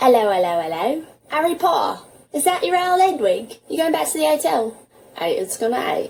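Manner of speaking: quick London Cockney accent, dropping every h. Demonstrating dropped H sounds in an accent lesson, in a Cockney accent. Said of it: "listening to a Cockney accent".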